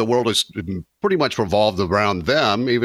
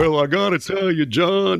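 very high, put-on Texas accent voice; 10 semitones higher than usual. Imitating someone who is an Aggie: Texas A&M Aggie voice. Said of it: "I was trying to do the A and M voice".

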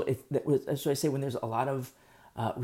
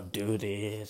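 sounding bored, pitched lower; 4 semitones lower, 4 dB quieter than usual. Teaching on repetition in Leviticus, the speaker demonstrates a bored tone. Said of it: "sound all bored about it".

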